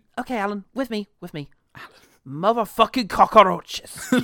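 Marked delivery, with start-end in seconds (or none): 2.2-4.1 put-on Cuban accent, higher pitch, louder. Trying out famous movie accents for the other speaker: Al Pacino Scarface Cuban accent. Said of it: "you've really got to lean into the fricatives of cockroach".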